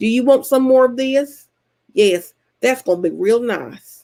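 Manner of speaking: put-on thick, very country Tennessee accent. Describing how her grandparents in tennessee talk, country tennessee accent. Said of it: "do talk like this".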